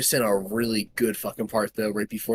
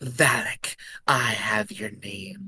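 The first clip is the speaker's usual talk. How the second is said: imitated whisper. Retelling how a film character says the demon's name: imitating a whisper. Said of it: "she whispers it to herself".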